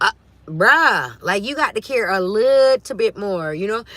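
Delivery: loud, exasperated voice.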